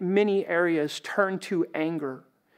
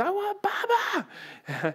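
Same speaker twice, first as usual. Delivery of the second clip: put-on very high, angry, swooping toddler wail. Retelling how a son woke each morning: imitating a child screaming. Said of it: "just screaming at the top of their lungs".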